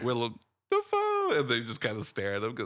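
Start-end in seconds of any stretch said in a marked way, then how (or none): 0.0-1.3 very high, croaky, frog-like bird voice. Retelling a TV gag about a name: imitating a frog talking to a bird. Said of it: "a frog talking to a bird".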